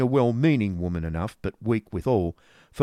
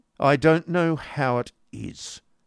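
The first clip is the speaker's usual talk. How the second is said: muttered, mumbled; 5 semitones higher than usual. Ralph mutters in reply to a plea to help his brother's children. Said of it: "muttered Ralph".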